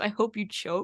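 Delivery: ordinary delivery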